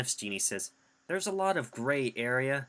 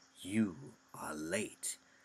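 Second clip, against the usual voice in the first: voice dropped low, hushed and eerily calm; 4 semitones lower, 6 dB quieter than usual. Talking about actors playing Jafar, speaker quotes the original: eerily calm Jafar voice. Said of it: "this eerily calm voice".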